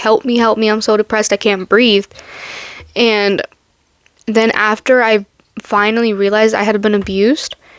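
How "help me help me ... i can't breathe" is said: put-on desperate, pleading voice. Retelling crying out to God while depressed: reenacting calling out for help. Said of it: "I was calling out to him".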